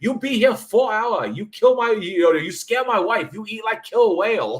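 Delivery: very high, angry, shrill screaming with fake accent. Speaker recalls a comedian's joke about a sushi bar manager; faux accent of a manager. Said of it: "the faux accent I just did".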